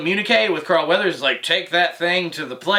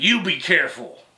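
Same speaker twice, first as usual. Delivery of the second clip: bratty fifth-grader tone, fired back. Retelling a stormtrooper's comeback to the Mandalorian: imitating a childish fifth-grader retort. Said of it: "like some, like, fifth grade fucking child".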